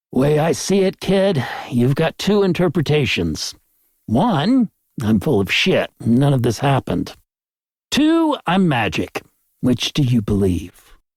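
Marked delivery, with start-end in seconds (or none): none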